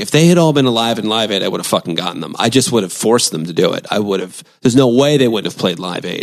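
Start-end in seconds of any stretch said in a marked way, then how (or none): none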